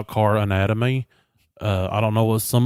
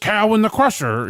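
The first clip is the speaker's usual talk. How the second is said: very bad put-on Irish accent, pitched very high; 11 semitones higher than usual. Trying out a line in a very bad Irish accent. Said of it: "that was very bad Irish".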